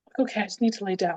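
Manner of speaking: usual speaking voice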